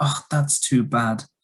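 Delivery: sympathetic tone. Demonstrating intonation for expressing sympathy, sounding sympathetic. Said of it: "If you have sympathy".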